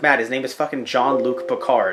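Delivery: normal talking voice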